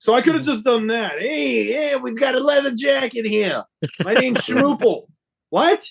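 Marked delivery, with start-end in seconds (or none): 1.2-5.1 put-on Brooklyn accent with long drawn-out "hey". Show how Tiny sounded to you: like Todd Pettengill doing a Brooklyn accent. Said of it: "doing a Brooklyn accent".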